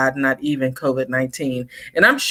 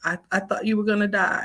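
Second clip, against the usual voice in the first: mock voice cracking, high, crackling, held-back emotion; 5 semitones higher, 7 dB quieter than usual. Retelling a daughter's words after covid: imitating a crackling, breaking voice. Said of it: "the crackle in her voice".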